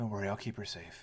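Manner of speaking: hushed whisper. A game narrator voices Derek as the player walks by: whispering in a low breath. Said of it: "Derek sort of whispers in a low breath".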